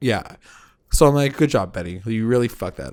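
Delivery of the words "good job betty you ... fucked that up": ordinary delivery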